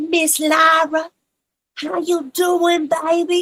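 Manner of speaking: put-on American dialect accent. Showing how a friend always greets Lara: imitating Fanny's voice. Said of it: "and it's her voice".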